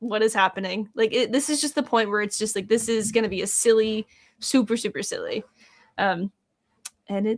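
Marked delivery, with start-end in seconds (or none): none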